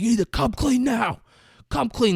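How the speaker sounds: mock, very high, shrieked screaming voice. Retelling a movie scene where one character screams at another: retelling a scream. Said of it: "Bruce Willis is screaming at him".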